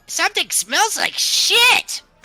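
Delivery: very high, loud, jeering goblin-like voice. Voicing a creature calling down to a player in taunt: taunting call. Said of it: "as he taunts you".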